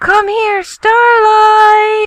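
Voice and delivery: put-on bellowing. Complaining about being called across the house, mimicking the caller: imitating a bellow across the house. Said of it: "change your tone of voice".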